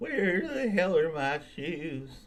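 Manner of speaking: put-on high, wobbly drunken voice. Pitching a character voice idea to others: wobbly drunk voice. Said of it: "Like a wobbly voiced drunk".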